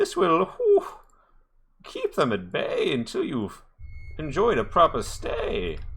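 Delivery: high, swooping, friendly owl spirit voice. Voicing a friendly owl spirit leaning down to a sleeper: friendly owl spirit voice. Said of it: "And he says".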